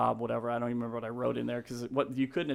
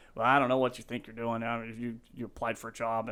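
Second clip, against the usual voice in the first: put-on gruff, curt, clipped voice. Retelling a phone call with a gruff man about a job: imitating Greg, gruff and curt. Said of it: "real gruff, real short".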